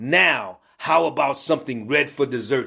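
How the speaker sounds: ordinary delivery, nothing marked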